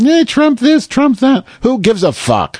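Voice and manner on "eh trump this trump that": very high, whiny mock newscaster voice. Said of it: "Some lady in a hat with a really high voice".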